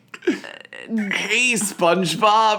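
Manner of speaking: extremely high-pitched cartoon voice. Trying out the voice of Larry the Lobster from SpongeBob: Larry the Lobster voice. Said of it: "what does he sound like".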